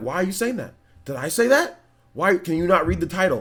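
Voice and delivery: firm, stern, clear-cut, no-nonsense tone. Retelling a reply to viewers asking about a Direct: imitating own stern reply. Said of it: "I was very stern and very clear".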